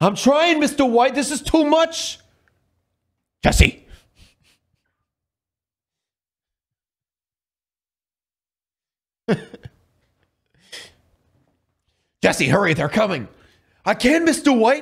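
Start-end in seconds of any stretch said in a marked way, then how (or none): 3.4-13.3 fast, cartoonish character voice. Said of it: "Sound more like Rick and Morty?".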